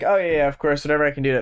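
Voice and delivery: absent-minded, distracted, offhand brush-off tone. Imagining market shopkeepers reacting to a passerby, mock distracted shopkeeper. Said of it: "shopkeepers that are distracted will be like".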